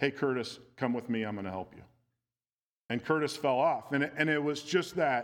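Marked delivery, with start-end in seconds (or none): 0.0-1.8 sweet, motherly coaxing voice, low and quick. Speaker retells a woman calling up to a man on the rope, imitating Kerry's sweet mom voice. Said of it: "in this sweet mom voice".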